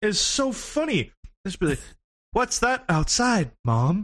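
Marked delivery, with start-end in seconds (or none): 2.3-4.0 put-on stunned, punch-drunk, concussed-sounding dazed delivery. Imitating the remaster's old English voice actors: imitating concussed-sounding voice acting. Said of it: "sounded like they all had concussions".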